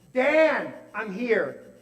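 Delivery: loud yell called out as if across distance. Retelling calling up to a patient in an upstairs apartment: imitating a yell. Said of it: "I would have to yell out to him".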